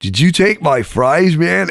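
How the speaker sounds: put-on wounded, close-to-tears, slow pleading voice. Retelling a friend asking who took his fries: imitating someone tearing up. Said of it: "And he starts to tear up".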